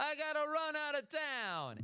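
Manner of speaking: horrible, very high, fake Italian accent. Imitating a relative's words about fleeing town: horrible put-on Italian accent. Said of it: "that was a horrible accent".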